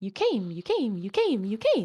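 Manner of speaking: swooping chorus of squawky little bird voices. Voicing Jade's puffin best friends as they walk by, little squawking voices. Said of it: "the all too familiar little squawking voices".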